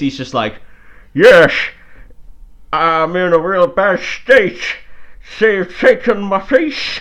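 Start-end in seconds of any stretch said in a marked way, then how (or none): 1.1-7.0 very loud, slow voice spoken without lips. Describing an actor's phone scene, imitating his voice of a man with no lips. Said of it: "his acting of a man with no face is like, it's like this".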